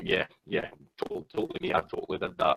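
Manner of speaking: acted, half-laughed through the words, swooping. Retelling own reply to police on arrest: retelling own laughing reply. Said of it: "and I started laughing".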